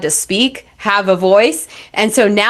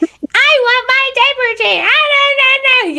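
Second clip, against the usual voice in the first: put-on very high, whiny two-year-old complaining voice. Imitating a two-year-old asking for a diaper change: imitating a whining toddler. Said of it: "they're just whining and complaining at you".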